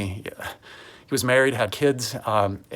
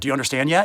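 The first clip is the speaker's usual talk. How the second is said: put-on impatient, frustrated tone, higher pitch; 3 semitones higher than usual. A parent describing how they talk to their kids when frustrated, mimicking own impatient tone. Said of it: "this attitude and this tone of like".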